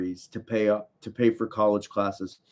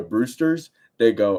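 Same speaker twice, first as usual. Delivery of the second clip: usual speaking voice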